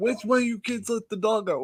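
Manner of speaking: mock furious, high, screaming-mad grandmother yell. Retelling how grandmother screamed about the dog: imitating grandmother screaming mad. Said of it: "she was screaming mad".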